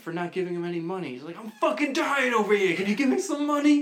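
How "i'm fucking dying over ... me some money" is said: shrill, very high, loud yell. Retelling how a guy asking for money yelled: imitating someone yelling. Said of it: "So the guy yells at him".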